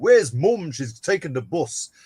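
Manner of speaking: broad northern English accent. Speaker from Grimsby showing how their accent sounded when younger, broad northern English accent. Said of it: "I had a very accentuated "you."".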